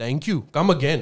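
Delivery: imitated North Indian accent. Demonstrating how an accent changes from south to north india, north indian accent. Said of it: "you would find the North Indian accent".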